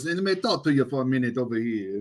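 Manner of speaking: put-on mobster voice. Retelling how Alex went back into his mob voice, imitate Alex's mob voice. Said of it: "into his mob voice".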